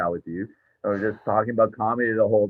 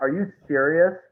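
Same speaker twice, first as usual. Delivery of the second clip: play-acted angry, fed-up disbelief, high outburst; 7 semitones higher than usual. Retelling a woman's reaction when he says he's leaving, imitating her pissed-off. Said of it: "so pissed off".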